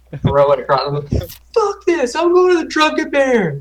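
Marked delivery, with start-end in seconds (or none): 1.5-3.6 very high, disgusted, all-out holler. Playing a character storming out of a tavern: yelling as loud as possible. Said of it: "yell that as loud as I can".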